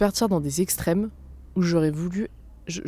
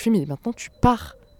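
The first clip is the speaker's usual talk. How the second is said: acted, mock-angry outburst in a higher pitch; 4 semitones higher, 4 dB louder than usual. Retelling standing up and telling a man to leave, acting out getting angry. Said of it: "je me suis levée et là je me suis énervée".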